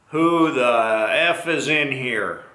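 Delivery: very slow, obnoxious, booming voice. Recounting a man entering the restroom, the speaker retells a booming voice. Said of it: "a very booming voice".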